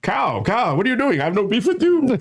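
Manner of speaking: very high, thin put-on character voice. Retelling impersonations done while being whipped: Gandhi impression. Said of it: "Gandhi going".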